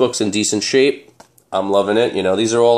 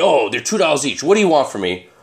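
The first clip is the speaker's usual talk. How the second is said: curt, snappy, irritated snapping tone; 4 semitones higher than usual. Retelling a flea market vendor's reply to haggling: imitating a vendor snapping. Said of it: "the guy just snapped at me".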